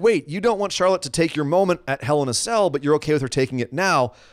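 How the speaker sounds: usual speaking voice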